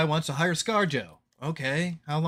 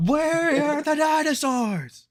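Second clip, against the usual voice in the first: mock screaming, higher and louder; 11 semitones higher, 4 dB louder than usual. Imitating a movie viewer watching the film: imitating someone screaming.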